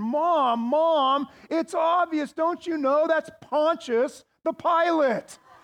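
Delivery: put-on fed-up, exasperated little girl, "mom" drawn out. Retelling a little girl's answer to her mom, mock-exasperated little girl. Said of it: "just kind of exasperated".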